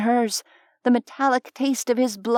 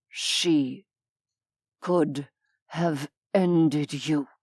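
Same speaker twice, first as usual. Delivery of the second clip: very slow, clear, each word deliberate and distinct; 8 semitones lower, 4 dB quieter than usual. Narrator reading, the demon grips her wrist and speaks: very slow and clear. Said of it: "very slowly and clearly".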